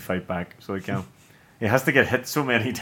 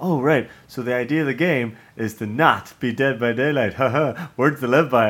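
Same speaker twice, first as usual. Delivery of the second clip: mocking oneself, chatty tone; 3 semitones higher, 4 dB louder than usual. Retelling a game trailer where Bruce Campbell talks into a headset: imitating Bruce Campbell. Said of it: "and he's like".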